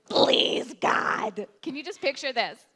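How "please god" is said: put-on pleading, lower pitch and louder. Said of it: "Moses pleaded with the Lord".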